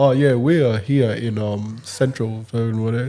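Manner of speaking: slow, measured news-reporter delivery. Retelling a reporter's live broadcast: imitating a news reporter voice. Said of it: "putting on that news voice".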